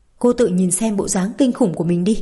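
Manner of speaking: ordinary delivery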